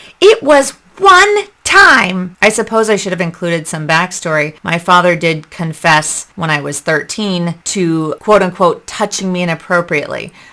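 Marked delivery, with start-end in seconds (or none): 0.2-2.4 put-on furious, shrill, loud snap, very high pitch. Retelling their mother's answer during an argument, imitating mother's angry snap. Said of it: "she was so angry".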